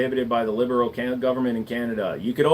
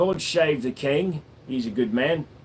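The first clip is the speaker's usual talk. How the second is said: performed put-on London accent. The speaker demonstrates what he calls his London accent. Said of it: "This is my London accent".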